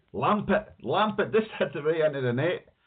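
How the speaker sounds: very high, shrieked, excited scream. Recalling watching the match beside a screaming nephew; retelling a nephew's scream. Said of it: "my nephew was screaming".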